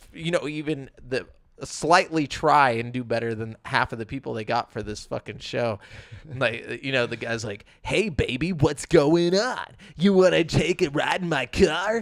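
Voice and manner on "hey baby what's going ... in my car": high, slow, stilted, over-earnest bad-dub delivery. Complaining about a show's voice actors, the speaker imitates bad dub voice acting. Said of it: "who the fuck talks like that".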